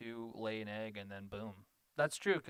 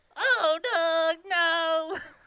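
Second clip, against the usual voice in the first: shrill, high, loud, shrieking cartoon voice; 15 dB louder than usual. Asked whether they can do Patty's voice, Patty Mayonnaise voice. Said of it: "It was very raspy".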